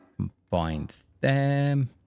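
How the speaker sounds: lilting, singsong delivery.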